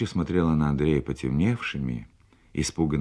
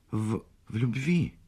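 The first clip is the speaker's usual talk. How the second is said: hesitant, high, faltering, finally forced out; 6 semitones higher, 4 dB quieter than usual. She falters, pauses, then finally finishes her sentence; hesitant, after a pause. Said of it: "помолчала и потом все-таки вымолвила".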